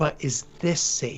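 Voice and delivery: whispered voice. Leaning in close to him and gesturing at the ground, whispering. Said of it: "I'm gonna whisper to him".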